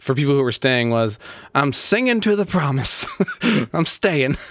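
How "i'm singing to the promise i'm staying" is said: upbeat, positive, sermon-like proclaiming tone. Giving a statement for people who were staying, as a Joel Osteen impression. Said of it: "That's my Joel Osteen impression".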